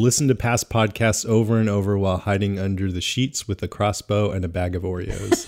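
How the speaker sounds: ordinary talk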